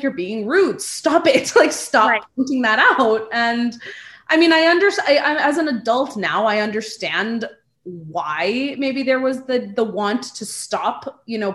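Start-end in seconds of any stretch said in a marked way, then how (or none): 0.0-3.3 mock-angry, scolding tone. Retelling how your mom scolded you as a child for pointing, mock-angry scolding. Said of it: "my mom was so angry with me".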